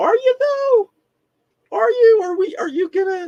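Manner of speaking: very high, incredulous, disbelieving tone. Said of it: "And I'm like".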